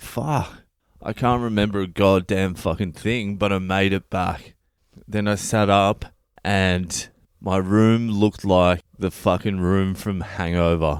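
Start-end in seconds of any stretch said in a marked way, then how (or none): none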